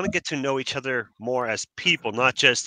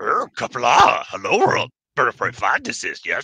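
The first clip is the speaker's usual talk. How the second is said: imitated elderly alien voice; 4 dB louder than usual. Showing how another speaker's greeting should be said, in the Yoda voice. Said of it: "You got to do it in the Yoda voice".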